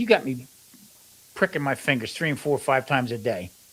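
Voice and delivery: ordinary talk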